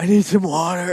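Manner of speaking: high, out-of-breath, pleading gasp.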